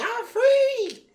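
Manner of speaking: shrill, high, very loud exclamation. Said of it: "where she was like".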